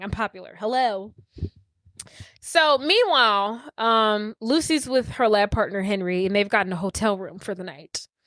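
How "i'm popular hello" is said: fast, rattled-off, dismissive tone. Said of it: "And she was like".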